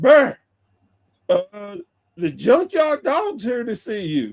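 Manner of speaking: casual calling-out voice. Telling about a visitor arriving, reenacting calling to someone upstairs: retelling a yell. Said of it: "I just yelled upstairs".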